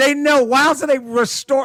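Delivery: furious raging yell. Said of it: "I'm like".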